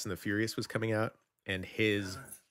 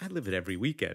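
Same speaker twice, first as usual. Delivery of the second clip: put-on dry, unbothered, deadpan delivery. Repeating a boy's reply to the speaker, imitating his deadpan delivery. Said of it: "it was just came out so deadpan".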